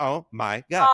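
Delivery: put-on young teenager voice, excited, all worked up, gushing. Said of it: "I had to say it like that too, like a fourteen year old".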